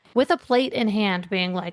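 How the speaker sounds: ordinary talk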